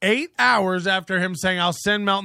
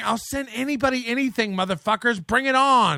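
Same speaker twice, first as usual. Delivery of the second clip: put-on screaming, higher; 4 semitones higher than usual. Quoting what a man screamed eight hours earlier, imitating someone screaming. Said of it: "he was screaming".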